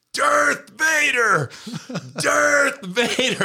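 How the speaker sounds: mock very high, drawn-out screaming. Retelling screaming at a player while his brother objected, re-enacting the scream. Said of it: "And I'm just screaming".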